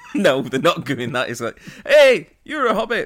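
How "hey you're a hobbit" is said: high, loud put-on Irish accent. Imagining people on the street greeting an actor: put-on Irish accent. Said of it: "except in an Irish accent".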